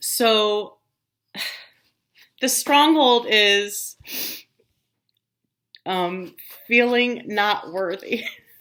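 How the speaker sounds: crying, with a tearful, breaking voice. Sharing what came up during a fast, crying while speaking. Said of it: "I don't know why I'm crying".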